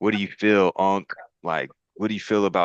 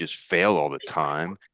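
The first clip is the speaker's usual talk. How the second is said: usual speaking voice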